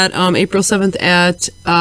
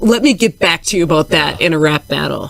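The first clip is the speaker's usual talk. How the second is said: plain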